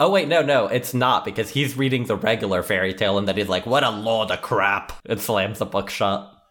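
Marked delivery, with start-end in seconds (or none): 3.7-4.9 put-on ogre voice, slower. Recounting the opening of the first Shrek movie, doing a Shrek impression. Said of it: "Is that your Mike Myers?".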